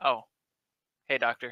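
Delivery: feigned casual tone. Acting out walking past people without registering them, mock-nonchalant greeting. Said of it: "a very nonchalant".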